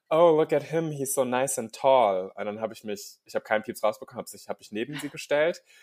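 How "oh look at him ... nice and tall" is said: put-on diva voice, higher and louder. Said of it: "sie sagte dann so".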